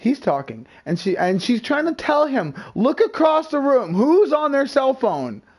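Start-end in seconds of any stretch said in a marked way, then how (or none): 2.8-5.4 urgent, high, loud half-scream, near screaming. Retelling a friend telling a prank victim to look across the room: imitating someone almost screaming. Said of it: "She's almost screaming at this point".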